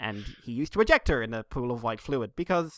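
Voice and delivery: ordinary talk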